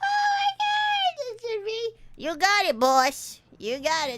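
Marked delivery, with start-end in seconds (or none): 2.2-4.2 put-on big fat rat voice, louder. Voicing a rat character calling for its boss: big fat rat voice. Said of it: "That should be the poi boy voice".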